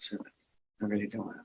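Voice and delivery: barely audible speech. Being questioned about a past remark, speaking too quietly. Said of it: "I can't hear you".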